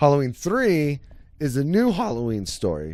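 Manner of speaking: cracking, breaking voice mid-line. Explaining the Halloween film series to a listener, voice cracking. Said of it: "My voice just cracked".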